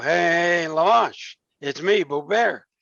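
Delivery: slow, dragged-out, drawn-out cartoon-style delivery. Retelling mimicking the cartoon bear: Boo-Boo Bear voice. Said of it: "And I used to mimic".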